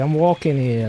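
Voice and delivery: put-on, typical New York accent. Showing the others a typical New York accent. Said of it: "that kinda voice".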